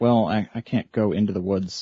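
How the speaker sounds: usual speaking voice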